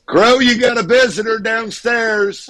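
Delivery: very high, drawn-out yell, calling out. Calling to the cat guy that he has a visitor: yelling. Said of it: "I'm getting ready to yell at the cat guy".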